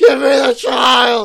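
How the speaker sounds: very high, very loud, shrill, drawn-out yell. Retelling a track's story where he yells back at the wind: imitating a character yelling. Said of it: "And he's yelling back".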